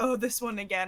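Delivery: plain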